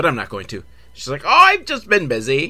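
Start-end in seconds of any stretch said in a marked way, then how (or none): 1.2-2.5 failed, bad put-on Irish accent, pitched up. Retelling a scene, voicing her reply to a phone call, bad Irish accent attempt. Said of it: "What the fuck accent was that one?".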